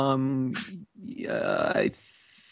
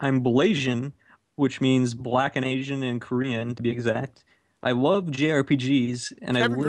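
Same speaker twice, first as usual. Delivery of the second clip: normal talking voice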